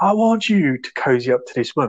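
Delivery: rough, forceful, aggressive, bullying tone. Retelling a film scene where a detective shouts at a man: imitating someone shouting. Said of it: "he just shouting at him".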